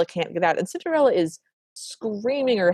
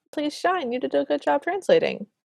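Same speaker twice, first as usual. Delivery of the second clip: sarcastic, pitched-up, insincere-sounding praise; 8 semitones higher than usual. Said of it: "That sounded incredibly sarcastic".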